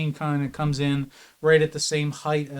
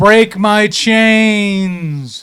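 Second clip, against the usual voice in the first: loud chorus of many voices, "chains" stretched out; 6 semitones higher, 13 dB louder than usual. Voicing a strange voice that others hear, like many voices at once. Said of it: "sounds like a collection of voices at once".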